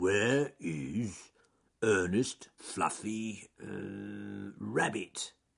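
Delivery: very slow, drawn-out growl. Narrator reading a bear character's question after hearing shouts, growled. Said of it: "he growled".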